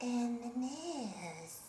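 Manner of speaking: very quiet, soft, seductive, sexy murmur. Asked for the sexy one again, repeating the phrase: sexy voice. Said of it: "Do the sexy one again".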